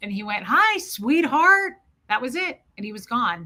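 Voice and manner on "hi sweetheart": rasping, raspy voice, pitched up. Retelling a dream in which a man showed up in his tuxedo, in Fred's raspy voice. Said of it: "all he did was his raspy voice".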